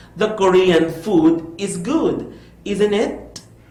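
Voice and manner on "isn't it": rising pitch on "isn't it". English intonation lesson, tag question expecting yes: rising pitch on isn't it. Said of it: "The part, isn't it, you know, goes a little higher".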